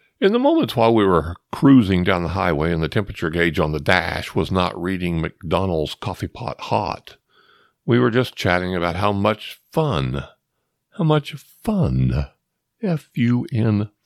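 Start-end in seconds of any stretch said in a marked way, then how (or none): 11.0-13.9 sarcastic drawl, pitched high. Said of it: "in case you couldn't hear the sarcasm in my voice".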